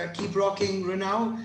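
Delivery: normal talking voice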